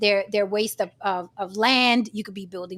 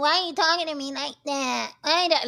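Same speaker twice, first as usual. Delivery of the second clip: high-pitched, tearful, crying voice; 5 semitones higher than usual. Retelling how upset visitors complained: imitating someone crying. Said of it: "some come up here crying and going".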